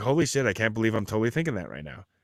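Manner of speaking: normal talking voice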